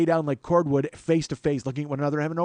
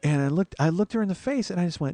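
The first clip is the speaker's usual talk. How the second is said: ordinary delivery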